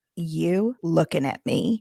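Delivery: completely serious, no joking. Retelling what the child said back: imitating a dead serious tone. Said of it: "dead serious".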